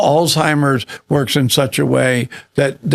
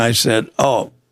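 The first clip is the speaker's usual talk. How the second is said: usual speaking voice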